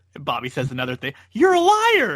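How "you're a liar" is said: very high, loud screeching scream. Retelling how the commentator answers every remark: imitating Gorilla screaming. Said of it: "he just screams at him".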